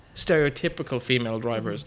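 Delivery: plain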